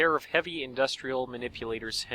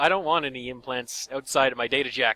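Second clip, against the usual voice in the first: usual speaking voice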